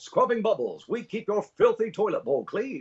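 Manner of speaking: put-on very high, old-timey newsreel announcer voice. Showing the opening narration voice he used: old newsreel announcer voice. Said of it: "that's just an old newsreel guy".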